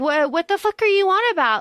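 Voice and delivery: high, furious, exasperated, angry outburst. Retelling an argument, the speaker imitates a person's angry outburst. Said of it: "Himina gets so angry".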